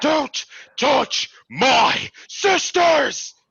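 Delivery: very high, ringing, shrill war cry. As an enemy sprints toward the prince, the character attacks, shouting. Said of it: "as I shout".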